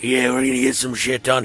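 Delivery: very deep, very low, gargling, sand-in-the-throat drawl. Describing how the big guy talks, quoting him in a gargling-sand voice. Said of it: "talk like they're fucking gargling like sand".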